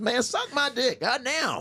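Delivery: high, soft comedian voice. Showing a friend how a voice becomes a different person, Pryor impression. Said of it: "it's like Pryor when he goes".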